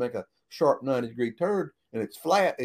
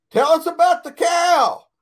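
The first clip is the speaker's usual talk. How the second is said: shrill, booming, very loud, high-pitched holler; 11 dB louder than usual. Telling a story, he recalls someone in the back hollering at him: retelling a holler. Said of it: "somebody in the back hollers".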